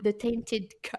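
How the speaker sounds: mock British pronunciation. French speaker saying an english book title aloud, in a put-on british accent. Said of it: "je le dis avec l'accent british".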